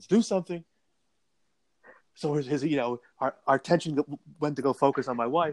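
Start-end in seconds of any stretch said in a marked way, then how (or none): 0.0-0.6 put-on yelling, higher pitched. Retelling his wife in labor yelling at the men watching the game: imitating wife yelling. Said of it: "My wife yells at us".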